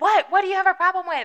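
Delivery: put-on loud, high, confrontational drunken yelling. Retelling how a drunk friend yelled at passing drivers: imitating a drunk friend yelling. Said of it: "yelling at people".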